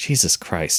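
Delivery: muttering under breath. Telling a story of waiting at a counter, the speaker recalls cursing, muttered under breath. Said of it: "Under my breath, I mutter".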